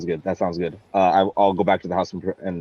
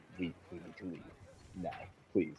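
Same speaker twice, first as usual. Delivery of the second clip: rushed, fast, very hushed, urgent whisper; 21 dB quieter than usual. Voicing a character who whispers to friends about leaving: urgent whisper. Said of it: "I urgently whis-, uh, whisper my friends".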